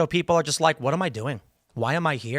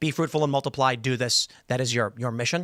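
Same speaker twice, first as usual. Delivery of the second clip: usual speaking voice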